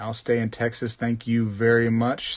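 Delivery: ordinary delivery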